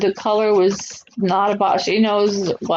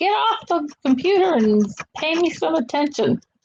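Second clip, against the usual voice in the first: mock high, yowling mountain-lion style yell; 7 semitones higher than usual. Imagining yelling at a boyfriend on the computer, mock yelling like a mountain lion. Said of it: "I might sound like a mountain lion too, yelling at him".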